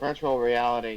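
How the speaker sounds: flat, low-toned delivery.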